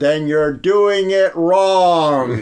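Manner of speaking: very loud, shrill, piercing scream, "wrong" stretched out. Speaker retells screaming at a woman during a race, retelling own scream. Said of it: "I just screamed at her".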